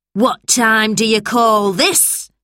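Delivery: shouted. A narrator reads Mrs. Bleak confronting George as he runs in, shouted. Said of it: "She shouted".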